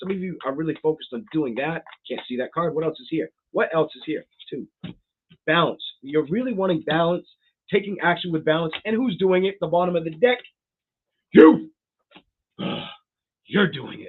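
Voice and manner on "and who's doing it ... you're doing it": fired-up, loud, emphatic shouting. Reading tarot cards aloud for Leos, shouting. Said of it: "Sorry that I'm screaming at you".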